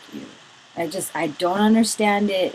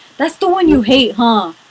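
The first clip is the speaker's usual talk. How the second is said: put-on very loud, high kid voice, blurted out; 5 semitones higher, 9 dB louder than usual. Retelling a supermarket trip, imitating a child speaking loudly. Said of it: "Like, all loud".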